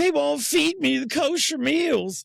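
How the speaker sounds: weepy, tearful whine, voice pitched way up. Retelling a jailed man's call to his mom: imitating someone crying. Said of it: "he was calling his mom crying".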